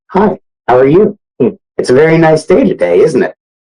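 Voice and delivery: mild, gentle-mannered, high-pitched voice. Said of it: "he'd be like very soft".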